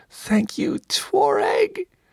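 very high, pained, squeaky voice. Narrator reads a struck captive's line to the guard, squeaking. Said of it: "he was still able to squeak".

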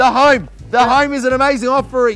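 full-volume, loud, high-pitched yelling. Making a video while someone with headphones tells them not to yell: yelling. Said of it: "Don't yell, you don't need to yell".

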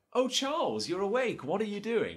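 very high-pitched infomercial sitcom housewife voice. Retelling a blender infomercial done like a sitcom: acting out sitcom-style infomercial wife. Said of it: "the wife comes in, and it's like".

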